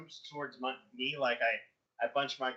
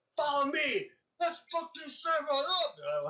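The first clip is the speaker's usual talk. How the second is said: very high, swooping, rousing shout; 14 semitones higher, 3 dB louder than usual. A player recounts rallying the ninjas against a samurai, retelling a yell at the ninjas. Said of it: "I yelled at the ninjas like".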